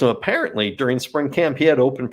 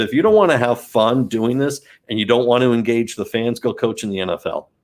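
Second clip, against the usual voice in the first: ordinary talk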